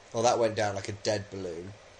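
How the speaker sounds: plain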